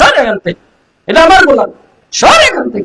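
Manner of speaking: high, shouted, scolding tone.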